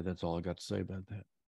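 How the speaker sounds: usual speaking voice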